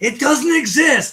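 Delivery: shrill, high, loud, dead-certain emphatic insistence. Retelling what Greg would always say: imitating Greg's emphatic insistence. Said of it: "with four exclamation points".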